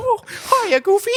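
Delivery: very high squeaky voice. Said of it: "I prefer my Mickey accent".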